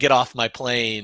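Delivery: put-on growling voice. Quoting an actor's movie line in his voice: Harrison Ford growl. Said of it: "I love when he gets a growl".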